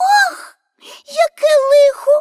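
very high, loud, ringing outcry. Narrator reads a character reacting to the countess's lament, exclaiming. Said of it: "Вигукнула Пепі".

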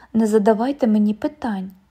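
ordinary delivery

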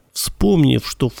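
ordinary delivery

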